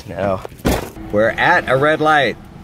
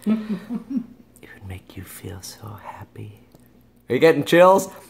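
mock, put-on ASMR-style delivery; 3 dB quieter than usual. Eating fudge and joking to viewers, doing some asmr: mock asmr voice. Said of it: "I'm gonna do some A S M R on you guys".

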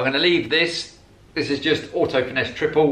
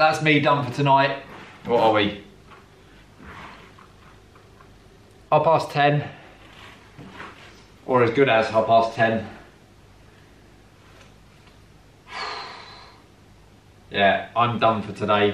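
tired, flat, unenthusiastic, exhausted voice; 2 semitones lower than usual. Wrapping up for the night after a long workday: tired, unenthusiastic voice. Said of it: "Sorry if I don't sound very enthusiastic".

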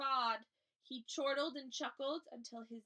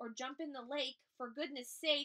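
ordinary delivery

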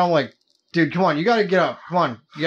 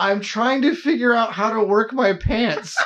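mock almost-crying, tearful young child voice; 5 semitones higher than usual. Telling the listener how they sounded behind the door: imitating an almost-crying five-year-old voice. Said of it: "5-year-old type voice".

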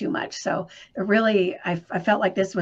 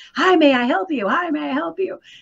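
mock very high, loud, shouted voice; 10 semitones higher, 5 dB louder than usual. Retelling how restaurant staff greet people at the door: imitating staff yelling a greeting. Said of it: "they're yelling".

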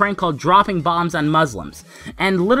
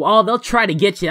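ordinary talk, nothing marked

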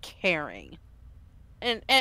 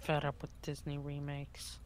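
low, soft, fed-up groan. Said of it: "that groan does not sound very happy".

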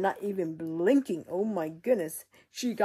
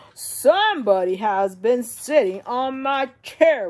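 big, loud, slow, booming delivery; 4 semitones higher, 10 dB louder than usual. Telling the three bears story, Papa Bear finds his chair messed up, great Papa Bear voice. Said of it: "with a great voice".

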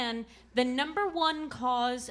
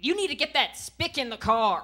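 put-on loud elderly grandfather voice; 5 dB louder than usual. Retelling what grandpa says at a matinee: imitating grandpa. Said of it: "Grandpa'll say something like".

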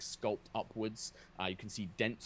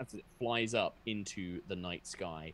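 ordinary talk

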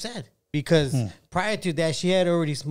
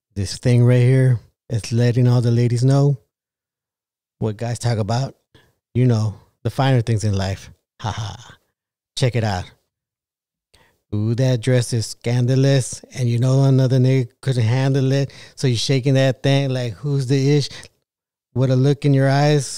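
put-on seductive voice, deep and raised; 4 semitones lower, 5 dB louder than usual. Speaker announces he'll do this one in his sexy voice: sexy voice. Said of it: "I guess I got to put on my sexy voice for this one".

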